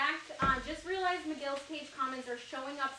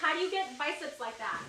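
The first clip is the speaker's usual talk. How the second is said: normal talking voice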